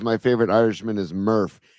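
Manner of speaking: ordinary talk, nothing marked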